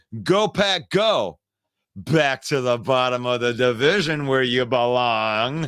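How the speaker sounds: mocking, tongue-in-cheek, sarcastic read-aloud. Reading a comment aloud again the correct way, reading a comment sarcastically. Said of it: "So let's read it in the correct way".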